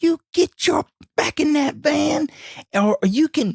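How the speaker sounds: very high-pitched screaming rant. Retelling a man screaming at him by his van, imitating a man screaming. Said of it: "He is screaming and he's saying".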